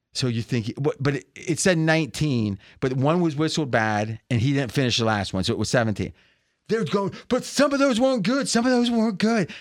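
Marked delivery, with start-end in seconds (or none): 7.3-9.5 acted-out high, protesting, objecting yell. Retelling how people protested a count: imitating people screaming. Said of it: "They're screaming".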